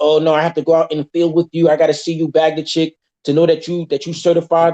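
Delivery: ordinary talk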